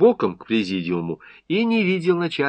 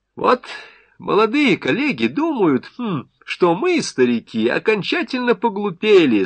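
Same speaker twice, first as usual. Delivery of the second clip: sarcastic, pitched-up voice; 5 semitones higher than usual. Peskov addresses the audience from the podium, sarcastic. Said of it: "с сарказмом проговорил Песков".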